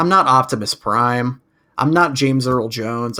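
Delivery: normal talking voice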